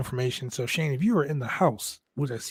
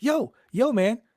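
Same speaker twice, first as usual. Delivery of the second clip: nonchalant, tossed-off, a bit higher pitch; 9 semitones higher than usual. Retelling a wrestler's entrance: imitating nonchalant Bron Breakker. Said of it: "he's like".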